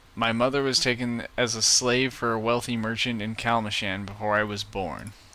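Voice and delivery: ordinary talk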